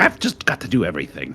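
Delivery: fast mumbling under breath. Voicing a healer character who casts a spell on an ally, mumbling to himself. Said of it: "As he kind of mumbles to himself".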